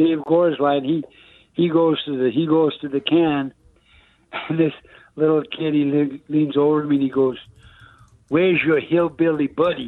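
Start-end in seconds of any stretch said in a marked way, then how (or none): 8.3-9.9 put-on heavy Bronx accent. Retelling what a five-year-old heckler leaned over and said, deep bronx accent. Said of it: "with the deep Bronx accent".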